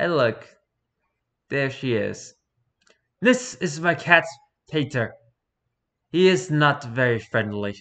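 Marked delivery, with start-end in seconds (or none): 3.2-7.8 put-on heavy Eastern European accent. Voicing an imagined 13-year-old girl, in a heavy Eastern European accent. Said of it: "with a heavy Eastern European accent being like".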